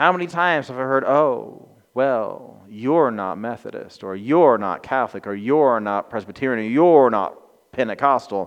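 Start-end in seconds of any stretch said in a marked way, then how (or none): 1.0-8.5 patronizing, superior, talking-down tone. Quoting religious people who look down on others, in a mock-condescending voice. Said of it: "in that condescending voice".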